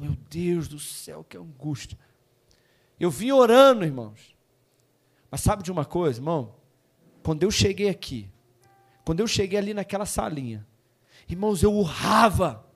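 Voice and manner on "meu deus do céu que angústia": put-on very quiet, hushed, anguished, sighing lament. Showing how one sighed at home on Sunday: imitating own anguished sighing. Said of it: "eu tava suspirando, eu tava em casa assim, ó".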